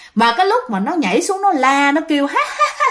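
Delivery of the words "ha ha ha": high, noisy, cackling demon voice. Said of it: "nó cười um sùm".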